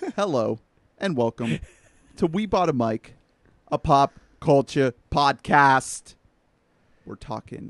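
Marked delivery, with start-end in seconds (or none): 0.1-6.1 put-on Boston or New York accent. Opening the podcast episode and welcoming listeners, in a Boston or New York accent. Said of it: "Was that a Boston accent or New York accent?".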